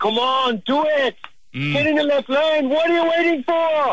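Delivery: very high-pitched, yelled, shouted delivery. Imagining him yelling driving directions at you, Arnold Schwarzenegger impression, mock-yelling. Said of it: "he just starts yelling at you".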